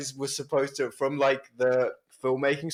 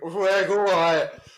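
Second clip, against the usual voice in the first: botched put-on London roadman accent, high and loud; 5 semitones higher, 5 dB louder than usual. Retelling how an actor tried the line: imitating a bad Roadman accent. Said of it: "You tried to do a Roadman accent".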